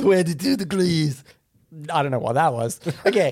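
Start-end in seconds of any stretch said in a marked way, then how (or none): 0.0-1.2 fake French accent, louder. Repeating a temperature playfully: put-on French accent. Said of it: "That's more French".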